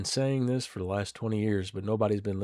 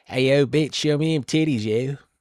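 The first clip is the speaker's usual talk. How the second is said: clumsy, loud put-on Philadelphia accent; 5 semitones higher, 8 dB louder than usual. Guessing what was said to a woman about her outfit, in a bad philly accent. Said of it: "I can't do a good Philly accent though".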